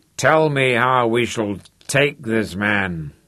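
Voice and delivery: voice growing thick. Big King, drinking from a jug, speaks to Crooked Leg, voice thickening. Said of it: "Big King's voice was thickening".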